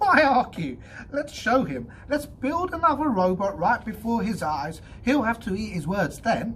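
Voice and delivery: sudden, very high, loud laughing outburst. Reading a story character's reply to his partner, laughing suddenly. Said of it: "clamoured Donovan, suddenly writhing out from under [name]'s friendly but metal-heavy arm".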